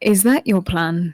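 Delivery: quiet, leaned-in voice. In a roleplay, leaning closer to another character to ask, in a quieter tone. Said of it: "kind of more with a quieter tone of voice".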